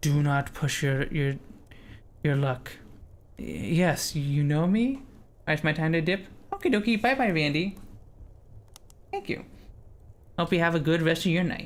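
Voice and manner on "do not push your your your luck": hissing, sibilant, threatening goblin voice. Narrator voicing a goblin addressing a cleric, hissing under his breath. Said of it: "he hisses at you under his breath".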